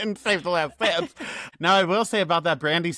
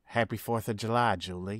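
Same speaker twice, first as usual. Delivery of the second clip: very low, creepy, menacing slasher murmur; 7 semitones lower, 6 dB quieter than usual. Speaker quotes the original film's killer while discussing a movie villain: scary killer voice. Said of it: "channel the scary one".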